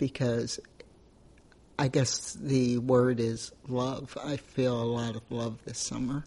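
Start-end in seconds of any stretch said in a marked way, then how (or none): 4.2-6.2 soft voice, close to tears. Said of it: "it does make me tear up".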